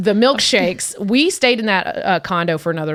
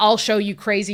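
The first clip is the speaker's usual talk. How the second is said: ordinary talk, nothing marked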